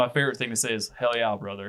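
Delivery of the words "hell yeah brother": ordinary delivery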